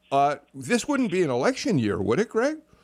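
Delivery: sarcastic tone rising high at the end. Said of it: "I was being sarcastic".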